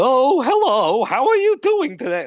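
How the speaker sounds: very high, loud storybook character voice. Showing a character voice from Twelve Forever: King Candy-like voice. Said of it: "almost like King Candy, like, Alice in Wonderland type voice".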